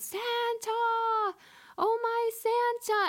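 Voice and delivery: acted-out, wildly excited yell, very high, drawn-out. Retelling the scene where Buddy learns Santa is coming to the store: retelling Buddy's excited yell. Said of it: "starts yelling".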